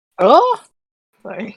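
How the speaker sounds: very loud, appalled, horrified outburst. Recapping a book scene, a character walks in on two people; acting horrified. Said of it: "Why do you sound horrified?".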